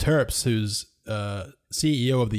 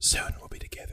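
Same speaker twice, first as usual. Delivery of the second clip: soft, hushed, breathy lean-in whisper; 8 dB quieter than usual. Joking that the game maker leans in and speaks: imitating a whisper. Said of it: "leans in and he just whispers".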